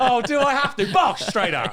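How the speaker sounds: mock eager, rushed, high, loud laughing delivery.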